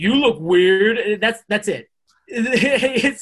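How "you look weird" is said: put-on confused voice, much louder. Recapping Mortal Kombat, imitating Sylvester Stallone's line like a confused cat. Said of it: "He's like a confused cat".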